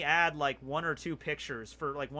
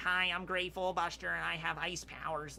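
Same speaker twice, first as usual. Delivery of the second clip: nasal, nerdy dubbed-sounding voice; 3 dB quieter than usual. Recalling a crappy anime dub, nasally nerdy Gray Fullbuster voice. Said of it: "this really nasally kind of nerdy voice".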